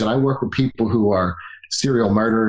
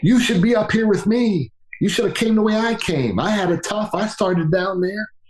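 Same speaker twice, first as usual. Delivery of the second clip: mock very high-pitched screamed outburst; 10 semitones higher than usual. Retelling a story of a man calling down from a mountaintop: imitating someone screaming. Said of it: "he starts screaming at them".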